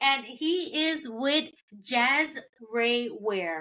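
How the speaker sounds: slowed-down, careful, deliberate pronunciation of the name.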